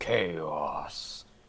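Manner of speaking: low mutter under the breath. A player has his character repeat a word, under his breath. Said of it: "says that under his breath".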